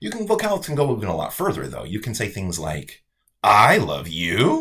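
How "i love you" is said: very loud, heavily sarcastic delivery. Demonstrating how tone changes meaning, saying it sarcastically. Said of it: "I think that means I hate you".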